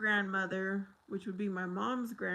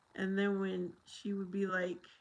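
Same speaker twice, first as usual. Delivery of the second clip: normal talking voice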